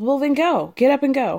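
normal talking voice

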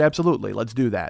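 ordinary delivery

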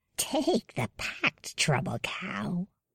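soft, hushed hiss through a held breath. Reading a story aloud, the narrator voices a female character who is hissing. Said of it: "she hisses".

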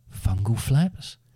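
wavering, unsteady, trembling voice. Narrator reads a character waking to see a bearded man, shaky voice. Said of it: "she said in a shaky voice".

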